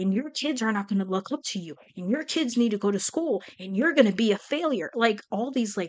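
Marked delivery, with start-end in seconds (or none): 0.0-4.9 nasty, mean, cruel berating tirade voice. Retelling what the ego was saying: imitating a mean, cruel voice. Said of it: "fucking mean".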